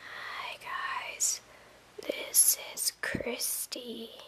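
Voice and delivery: faint, barely audible, slow whisper. Showing how a video sounds when the voice is not loud: too quiet voice. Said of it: "you don't want your video to be like this".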